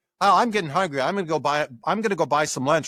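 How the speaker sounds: normal talking voice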